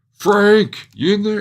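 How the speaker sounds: very high, very loud, drawn-out yelling. Voicing a man near a burning building, yelling for his friend.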